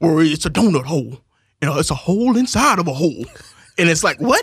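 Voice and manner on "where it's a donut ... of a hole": overdone, put-on Southern movie-style accent. Mocking a British actor given a Southern accent in a movie: imitating a movie Southern accent. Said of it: "who talks like this?".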